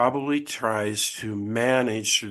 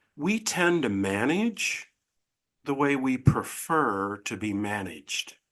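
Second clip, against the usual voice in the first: slow, deliberate, emphatic delivery; 2 semitones higher than usual. Sharing a belief with a listener so they can process it: said slowly. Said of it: "I'm gonna say these words slowly".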